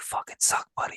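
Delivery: breathy, hushed whisper into the mic. Retelling a whisper heard on a show recording: imitating Mike Rita whispering. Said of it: "whisper into the microphone".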